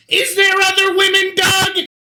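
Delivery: very high, wailing cry. Voicing someone in another cavern: wailing. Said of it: "you hear just wailing".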